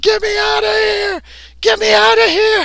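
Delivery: very high, rough, drawn-out desperate yell. Voicing a man trapped in a computer who wants out: yelling to get out. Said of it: "What do you say as you're trying to get out?".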